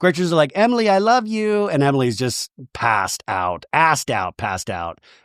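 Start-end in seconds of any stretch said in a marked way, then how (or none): 0.5-1.7 put-on high, drunk-sounding baby talk. Retelling a drunk cast member's line: imitating Gretchen's drunk baby talk. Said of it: "now this sounds like a baby".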